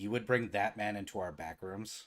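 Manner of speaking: flat, expressionless deadpan, very low and quiet. A man stares at the players and challenges them; deadpan. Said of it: "stares at you deadpan and goes".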